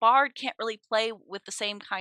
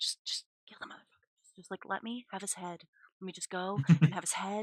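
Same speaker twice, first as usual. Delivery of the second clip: put-on whispering voice, quieter; 2 semitones lower, 6 dB quieter than usual. Retelling how the talking axe Steve urged Cal to kill: whispering as Steve the axe. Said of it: "Steve's whispering in Cal's ear going".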